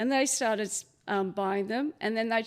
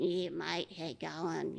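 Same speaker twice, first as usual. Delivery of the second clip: put-on nasal rural Queensland accent, lower, quieter, slower; 5 semitones lower, 7 dB quieter than usual. Telling a story about rural Queensland locals, the speaker imitates their nasal accent. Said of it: "they're very nasally".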